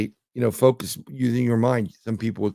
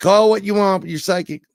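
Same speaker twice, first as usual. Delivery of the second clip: put-on thick Arkansas accent, very high; 9 semitones higher, 6 dB louder than usual. Retell how she kept insisting after you said no, imitating a woman's thick Arkansas accent. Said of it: "And she kept doing it".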